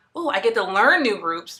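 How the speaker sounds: ordinary talk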